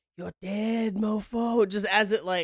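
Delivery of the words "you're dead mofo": spooky, put-on ghostly half-whisper. Joking about the ghost of a lime in sparkling water, half-whispering as the lime ghost. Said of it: "just whispering like".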